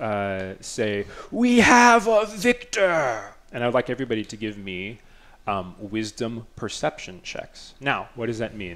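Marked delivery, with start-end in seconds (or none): 1.3-3.2 crazed cultist cry, very high, very loud, shrill, booming. Voicing a voice that calls the wrestling winner: mad cultist voice. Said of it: "imagine a mad cultist".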